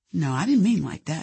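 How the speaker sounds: ordinary delivery, nothing marked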